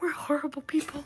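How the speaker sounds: breathy whisper, barely voiced, under the breath. A narrator voices a woman looking at a carved plaque, whispering under her breath. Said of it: "whispers under her breath".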